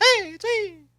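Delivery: very high, squeaky cartoon-like voice. Asked whether he ever does the Mickey voice, he shows it: Mickey Mouse voice. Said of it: "you ever do the Mickey voice?".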